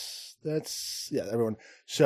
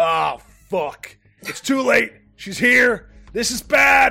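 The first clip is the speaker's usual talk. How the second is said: very loud, alarmed shout, rising in pitch; 9 semitones higher, 9 dB louder than usual. Voicing a character warning that an enemy has arrived: Big Lock shouting in alarm. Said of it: "Big Lock shouts".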